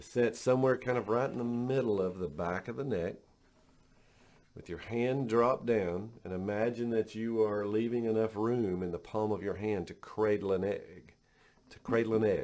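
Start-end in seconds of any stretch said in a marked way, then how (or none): 11.7-12.4 choked-up voice catching, emotion breaking through. The speaker, giving hand-position instructions, repeats a phrase, choked up. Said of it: "I got choked up there".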